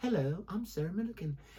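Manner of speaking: soft, calm, soothing voice. Imitating how Sarah Millican ends her videos, soothing. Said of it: "she's got this nice little soothing".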